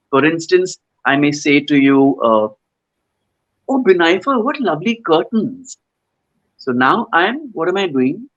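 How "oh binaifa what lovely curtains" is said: genuinely admiring, appreciative tone. Showing how tone of voice sends a message, an admiring, complimenting tone. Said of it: "I'm complimenting you".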